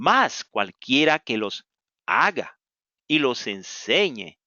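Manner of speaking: slow, unhurried reading.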